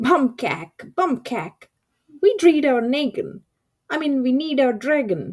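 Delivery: small, high, thrilled screaming voice. Reading a story as a tiny voice screams at the passing dragon, tiny excited scream. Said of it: "tiny, excited voice scream".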